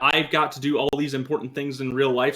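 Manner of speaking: plain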